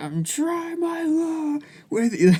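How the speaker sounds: mock, very high, stretched-out, drawn-out screaming. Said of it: "screaming, he's like".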